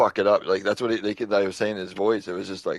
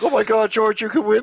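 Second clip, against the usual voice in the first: mock frantic, panicked pleading, very high and loud; 13 semitones higher, 6 dB louder than usual. Retelling a race, the speaker imitates Toto pleading with George, imitating Toto's panicked pleading. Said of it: "and panic in in, in Toto's voice".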